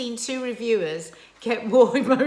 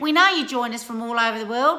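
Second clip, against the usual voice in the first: put-on Australian accent. Signing off a vlog to viewers worldwide, in an Australian accent. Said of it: "This is my Australian accent".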